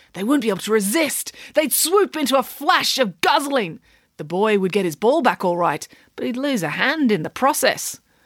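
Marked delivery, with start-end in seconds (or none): none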